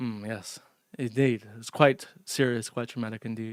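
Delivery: put-on strong Scottish accent, narrator-style delivery. Speaker imagines how Mister Snowflake would present the story: Mister Snowflake impression. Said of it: "how mister Snowflake would present it like".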